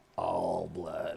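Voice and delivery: soft, unsettling, creepy delivery. Asked whether all blood excites him, the speaker answers in a creepy voice. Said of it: "Why are you trying to creep me out now".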